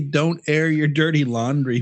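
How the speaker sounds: usual speaking voice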